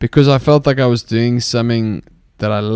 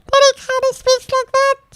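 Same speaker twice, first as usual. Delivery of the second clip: very high, helium-squeaky creature voice, up an octave. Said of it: "take it up an octave and he sucks helium".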